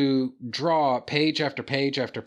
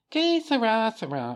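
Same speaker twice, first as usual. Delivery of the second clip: high-pitched cartoon little old lady voice; 9 semitones higher than usual. Explaining the voice used when reading an old woman's dialogue, high-pitched little old lady voice. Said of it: "that kind of high-pitched".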